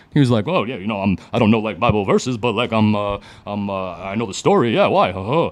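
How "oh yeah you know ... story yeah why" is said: cartoon-style bear character voice. Retelling how a man answered his question, in a Yogi Bear impression. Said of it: "I can't do his voice without doing the Yogi Bear impression".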